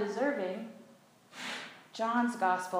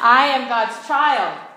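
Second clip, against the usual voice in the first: louder, more heartfelt delivery. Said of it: "say it again with a little more feeling".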